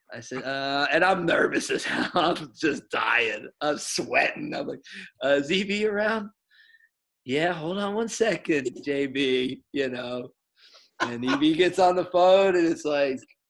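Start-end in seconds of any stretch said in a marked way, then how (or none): 7.3-9.7 little sugary, sweet, guileless, innocent voice. Retelling a phone call, the answer in Marcia's sweet, innocent voice. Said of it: "in her little sweet, innocent voice".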